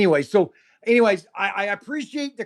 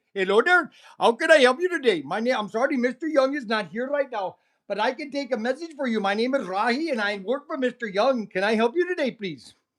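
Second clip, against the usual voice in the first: pretend Indian accent; 2 semitones higher than usual. Streamer answering a telemarketer's call on his live stream, fake indian accent. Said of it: "Sometimes I pretend like I'm an Indian".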